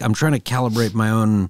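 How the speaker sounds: normal talking voice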